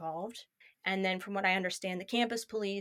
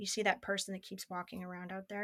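soft, hushed, half-whispered, intimate delivery; 6 dB quieter than usual. Retelling quietly asking a teacher about someone outside: retelling a half-whisper. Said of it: "and she leans in and I whisper".

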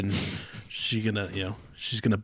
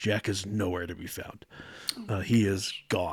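normal talking voice

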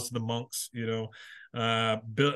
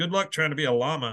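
ordinary delivery

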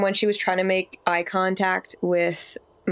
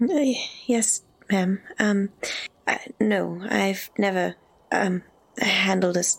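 slow, timid, hesitant, halting stammer. Voicing a timid girl answering a stern nun: timid stammering. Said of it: "my eyes are up here, not on the floor".

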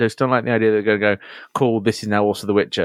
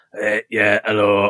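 put-on voice from the back of throat. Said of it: "My voice is like this, back at throat".

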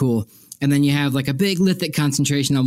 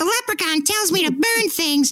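put-on very high, pitched-way-up cartoon kid voice. Joining a story about a young boy, imitating Ralph Wiggum: Ralph Wiggum voice. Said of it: "picture Ralph Wiggum from The Simpsons".

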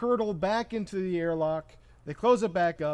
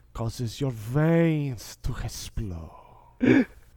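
low, very slow drawl, "veins" dragged long; 5 semitones lower, 3 dB louder than usual. Doing Jon Voight from Anaconda when asked: Jon Voight impression. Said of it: "That is such a dead-on impression".

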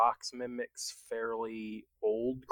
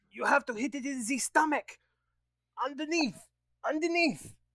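very high, loud shouted yell; 14 semitones higher, 4 dB louder than usual. A player voices their character during a fight, yelling out. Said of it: "Dialon's gonna yell out".

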